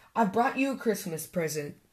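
ordinary delivery, nothing marked

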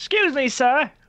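put-on British accent, pitched way up, swooping. Imagining walking up to a man to ask to get past, in a british accent. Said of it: "I went British there".

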